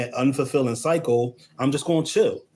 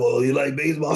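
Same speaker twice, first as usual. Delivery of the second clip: put-on creepy, cheesy flirting voice. Acting out a line used to chase someone: put-on creepy pickup-line voice. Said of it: "I'm sorry for that voice".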